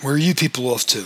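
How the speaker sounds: ordinary delivery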